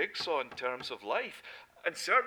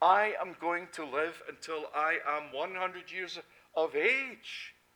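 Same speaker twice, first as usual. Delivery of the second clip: proud, booming, boastful declaration, acted out; 2 semitones higher, 3 dB louder than usual. Telling of a man who boasted minutes before a fatal heart attack, in a loud voice. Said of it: "declaring in a loud voice".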